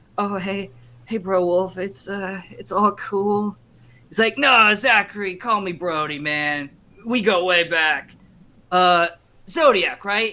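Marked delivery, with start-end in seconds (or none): 0.2-3.6 nervous, uneasy, halting, stumbling delivery. Voicing a character side-eyeing nervously at an old friend: nervous. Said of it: "side-eyeing nervously, and he's like".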